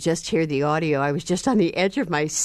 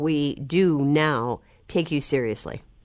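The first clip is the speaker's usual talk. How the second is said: ordinary talk, nothing marked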